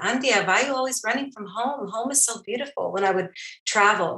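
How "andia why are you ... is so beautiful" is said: put-on, pitched-up old woman accent. Recalling a late grandmother's advice, imitating grandmother's accent. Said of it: "I just hear her in her accent".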